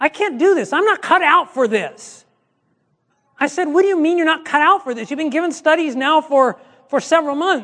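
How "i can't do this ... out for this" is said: slow, fed-up, frustrated lament. A pastor retelling a phone call, acting out Mary, mock-frustrated. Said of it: "And she was all frustrated".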